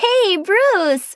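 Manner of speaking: very high, squealing, delighted tone. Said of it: "Meg squealed in delight".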